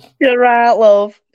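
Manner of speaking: put-on Yorkshire accent. Talking about picking up accents, the speaker tries a Yorkshire accent. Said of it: "Is that your Yorkshire accent?".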